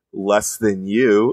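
sneering, scornful, put-down tone. Retelling a man's reply to his question, the speaker is imitating a sneer. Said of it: "he kind of like sneers and he goes".

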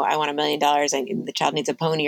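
usual speaking voice

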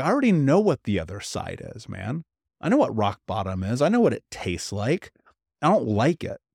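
usual speaking voice

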